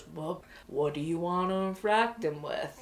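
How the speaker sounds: big man's deep, unhurried drawl, really low and slow. Retelling a question Richards asked, in a Richards impression, really low, deep, slow. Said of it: "he talked in this really low, deep voice, slow".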